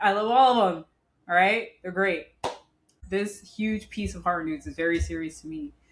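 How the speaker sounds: ordinary talk, nothing marked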